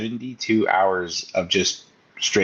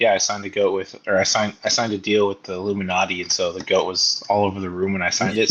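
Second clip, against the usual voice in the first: plain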